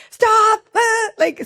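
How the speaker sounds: very high, loud, high-pitched yell. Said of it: "high, like, pitch voice".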